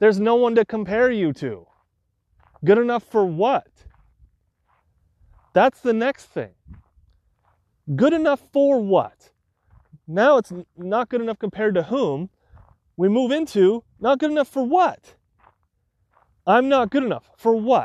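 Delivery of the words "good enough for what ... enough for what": angry, passionate speech, higher pitch. Speaking to listeners, passionate and angry. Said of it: "you can hear the passion or anger in my voice".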